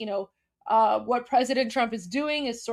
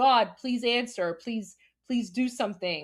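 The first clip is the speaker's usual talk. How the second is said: put-on desperate, pleading voice. Retelling a grieving mother's prayer to God: imitating a pleading mother. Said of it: "this grieving mother's pleas to God".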